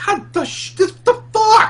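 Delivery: goofy, silly, very high funny voice. Telling a story about Bill coming around the trees: imitating Bill's funny voice. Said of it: "one of his really funny, funny voices".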